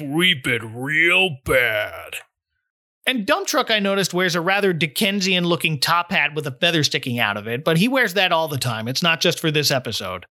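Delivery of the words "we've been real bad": low, deep, very slow, drawn-out drawl. Describing Dump Truck's voice in an episode, deep Dump Truck voice. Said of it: "It's that deep".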